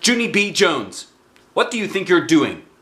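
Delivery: angry growl. Narrator reading the mother scolding junie b. jones, with an angry growl. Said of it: "she growled".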